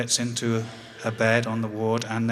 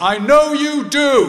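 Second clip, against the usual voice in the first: booming, very loud, slow, high-pitched, drawn-out call; 9 dB louder than usual. Retelling a father calling out as the speaker leaves the ward: imitating dad's loud voice. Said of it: "in a loud voice".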